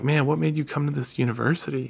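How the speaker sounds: normal talking voice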